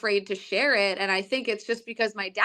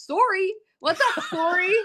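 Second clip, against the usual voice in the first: teasing, very high, slow put-on Canadian accent; 9 semitones higher than usual. Retelling how a coworker teased her Canadian accent: imitating teasing of a Canadian accent. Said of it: "I get teased for sounding Canadian".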